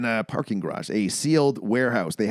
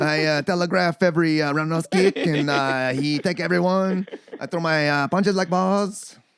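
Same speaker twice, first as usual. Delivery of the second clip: put-on, higher Belgian-French accent; 5 semitones higher than usual. Doing a Van Damme impression after being told it sounds like GSP: Van Damme impression. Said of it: "your impersonation of, uh, Van Damme".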